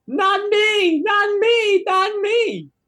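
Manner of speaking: very high, very slow, drawn-out goblin screech. Voicing a terrified goblin looking up at a killer: goblin shrieking.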